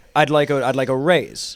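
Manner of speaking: normal talking voice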